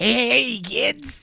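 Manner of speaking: belted out, very high pitched. Trying the Krusty the Clown voice again, higher pitched. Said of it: "It's a little higher pitched".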